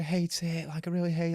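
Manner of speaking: high, tearful voice crying through the words. Speaker telling a listener about their mum's new hair, imitating someone crying. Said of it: "like crying".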